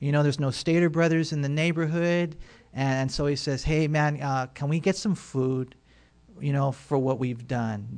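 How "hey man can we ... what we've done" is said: very meek, humble, deferential tone. Acting out a polite request for food: imitating David's meek request. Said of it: "David does it in a very meek way".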